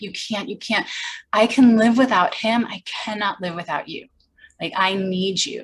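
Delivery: hysterical, sobbing, crying delivery. Retelling begging a parent on the phone: retelling hysterical crying plea. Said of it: "begging him, like, hysterical crying".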